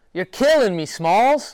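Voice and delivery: very high, loud shouted line. Giving an asked-for impression, quoting a favorite movie line: Sandlot impression. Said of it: "your best Sandlot impression".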